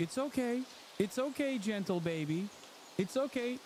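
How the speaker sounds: acted, high, soothing, coddling, babying tone. Act out the pilot talking to the ogre, imitating a pilot babying an ogre. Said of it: "the pilot babying the ogre".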